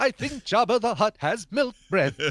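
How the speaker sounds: put-on high-pitched droid voice. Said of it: "I can only do that impersonation".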